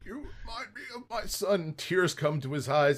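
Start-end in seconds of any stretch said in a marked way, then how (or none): 0.0-1.7 very high-pitched, dying voice. Acting out the other player's character lying there dying: imitating a dying person. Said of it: "As you're lying there dying, going".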